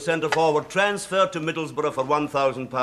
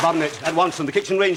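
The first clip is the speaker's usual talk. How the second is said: ordinary delivery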